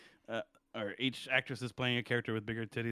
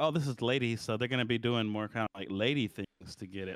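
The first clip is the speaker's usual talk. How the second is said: ordinary talk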